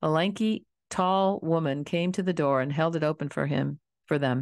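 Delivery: ordinary delivery, nothing marked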